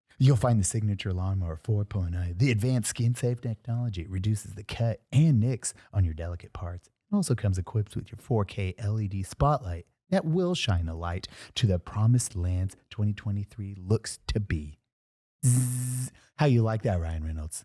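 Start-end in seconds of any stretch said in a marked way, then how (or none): 0.2-14.8 weird quiet put-on voice, lower. Reading an ad as Ryan Reynolds: Ryan Reynolds voice. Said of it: "this is my Ryan Reynolds face".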